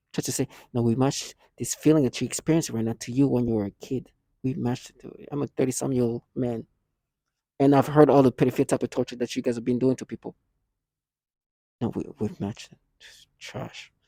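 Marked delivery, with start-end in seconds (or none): 0.7-5.2 put-on serious, menacing tone. Imitating the people the speaker accuses, in a mock-menacing serious voice. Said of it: "very menacing and serious voice".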